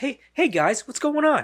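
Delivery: pitched high with a friendly, nice-guy tone. Show the others why he is wrong for the role, in a Mark Wahlberg nice-guy voice. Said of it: "He's got too much of a nice guy persona".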